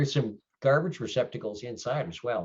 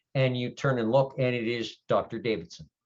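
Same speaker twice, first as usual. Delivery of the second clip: ordinary talk, nothing marked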